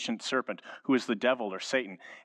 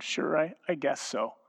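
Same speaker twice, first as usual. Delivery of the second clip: put-on small, whimpering little child's voice; 4 semitones higher than usual. Father retelling his six-year-old son's answer, imitating Beckham's whimper. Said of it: "in that 6-year-old kind of whimpering voice".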